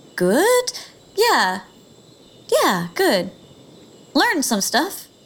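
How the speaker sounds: hesitant, halting voice. Asked how they are doing, the character answers, hesitant. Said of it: "Why do you both sound so hesitant?".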